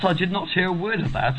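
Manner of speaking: put-on high-pitched posh English accent.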